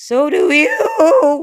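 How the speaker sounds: voice cracking, very high pitch and loud. Retelling what a guy said back at Disneyland, imitating his voice cracking. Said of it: "the voice cracked".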